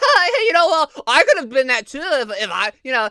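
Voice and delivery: laughing while speaking, tentative, hesitant delivery. Acting out Jimmy Fallon trying a joke: imitating Jimmy Fallon laughing. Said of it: "laughing, he'd be like".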